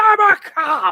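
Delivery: very high, shrill, loud scream. Retelling a movie chase scene where the cop runs past someone: imitating Dennehy screaming. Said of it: "he just screams".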